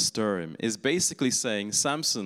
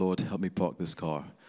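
put-on muttering under breath, lower pitch; 3 semitones lower, 3 dB quieter than usual. Retelling how a friend's mother prayed while parking: imitating muttering under breath. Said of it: "under her breath".

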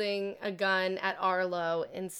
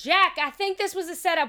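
yelling, higher and louder; 11 semitones higher, 8 dB louder than usual. Voicing a woman who warns jack it was a setup: shouting. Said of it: "shouts out".

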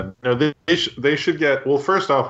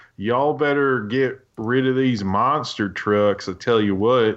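botched, unconvincing put-on Southern twang. Mocking an actor's bad accent in a movie: imitating a bad Southern accent. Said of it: "his Southern accent's, like, so bad".

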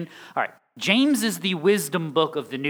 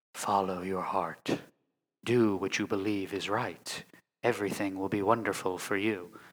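very low, slow, eerie announcer voice; 9 semitones lower, 7 dB quieter than usual. Imagining someone offering life advice, creepy announcer voice. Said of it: "why are you doing the creepy announcer voice?".

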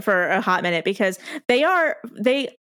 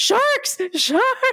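put-on very high, alarmed shouted yelling. Recounting a man in the water who immediately starts yelling, imitating someone yelling. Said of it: "he starts yelling sharks".

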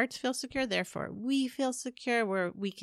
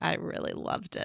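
whispered, snarky tone. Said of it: "she said something snarky".

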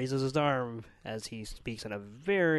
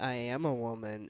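ordinary delivery

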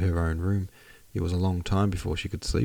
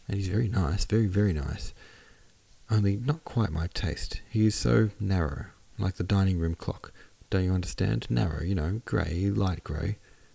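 plain

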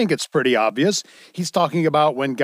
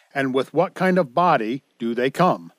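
ordinary talk

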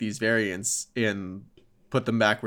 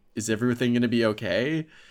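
ordinary talk, nothing marked

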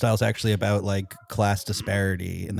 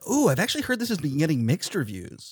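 high, swooping, excited tone; 8 semitones higher than usual. Echoing another speaker's line about mixed reviews: imitating an excited tone. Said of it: "I love sounding excited and being like".

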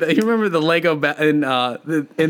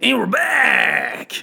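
raspy, creaky, rough character growl, pitched up; 8 semitones higher than usual. Redoing the voice used to open the segment: Wolfman voice. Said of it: "My Wolfman".

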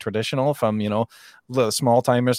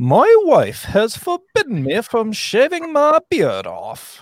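very high, swooping, put-on Scottish lilt; 12 semitones higher, 6 dB louder than usual. Speaker reading out Mike's message aloud, in a put-on accent for Mike. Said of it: "Mike's actual voice".

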